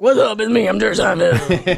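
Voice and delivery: rough, creaky voice, cracking and creaking. Retelling how another comedian does Jerry Seinfeld on his podcast: Jerry Seinfeld impression. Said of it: "Jerry Seinfeld on his podcast, and he goes like".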